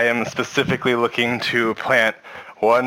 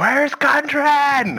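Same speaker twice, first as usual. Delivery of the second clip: very high, full-out scream. Player's character dashing toward a voice in the game, screaming. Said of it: "Probably just scream something like".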